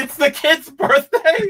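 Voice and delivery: high, loud, slow laughing exclamation, delighted.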